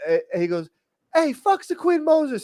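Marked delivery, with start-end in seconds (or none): 1.1-2.4 very high-pitched, loud yell. Retelling how someone yelled at another person: imitating Hitchens yelling. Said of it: "Hitchens yells at Zaybop".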